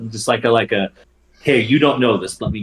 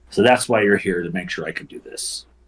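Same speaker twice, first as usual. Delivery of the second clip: mock gruff, tough voice; 3 semitones lower than usual. Speaker retelling a woman's line as she turns tough again, imitating a gruff, tough tone. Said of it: "right back to this gruff, tough bitch nature".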